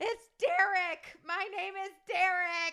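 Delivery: acted insistent yell, high and drawn-out. Retelling a drive-through order: imitating someone yelling. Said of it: "Derek starts yelling over the top of me".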